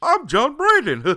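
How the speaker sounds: weird, silly shriek, very high and loud. Showing how to do John's introduction: weird, goofy John Brandon impression. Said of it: "weird, goofy impression".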